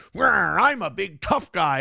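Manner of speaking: slow, derisive, mocking big-tough-guy posturing voice. Retelling a chatter's angry entrance in chat: mocking imitation of a tough guy. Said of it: "And then you came in here and you went".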